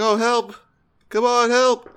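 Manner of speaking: limp, unconvincing, half-hearted, very high, drawn-out yell. Mocking an actor's yelling in a scene; mocking an unconvincing yell for help. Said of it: "the way he was yelling in the scene was not convincing".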